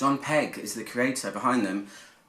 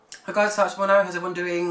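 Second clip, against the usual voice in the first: rushed, high-pitched, rattled off very fast; 7 semitones higher, 3 dB louder than usual. Reviewer greeting viewers at the start of a video, said really fast. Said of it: "I said that really fast".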